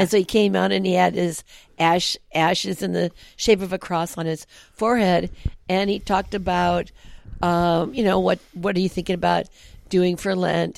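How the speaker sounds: ordinary talk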